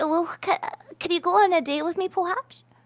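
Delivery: nervous, stammering, stuttering speech. Asking another speaker on a date: nervous stammering. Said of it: "why are you asking me like that?".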